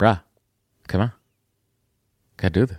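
put-on easygoing, relaxed voice with Boston accent. Giving advice by voicing the listener's inner voice: Boston accent. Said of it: "I don't know why your voice is Bostonian".

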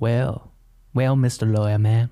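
fake Texas accent, put on for show. Imagining sitting on a fence with a megaphone: put-on Texas accent. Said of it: "Start talking in a Texas accent".

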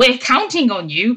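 disapproving, judgmental, loaded and pointed tone. Retelling a teammate's remark to a player who isn't confident, mock-judgmental tone. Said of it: "sounds all judgmental at her and goes".

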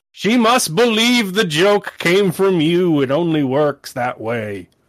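high-pitched, grandiose, intoning giant god voice. In a tabletop game, a giant tree-man deity explains the price to a player, intoning. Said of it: "A giant beanstalk that eventually bifurcates into the shape of a man goes shooting through the roof. / It's just Miss Zephyr's taking a nap and there's just a giant 50-foot tree man jutting out of her".

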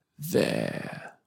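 rough, harsh, throaty whisper, very low. A shadowy figure pointing someone out to another, harsh, throaty whisper. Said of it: "spoke in a harsh, throaty whisper".

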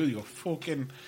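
Irish accent, O vowel for U in fucking. Showing how fuck sounds with an O instead of U: Irish "fucking" with O sound. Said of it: "like that O instead of the U".

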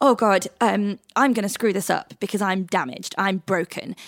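plain

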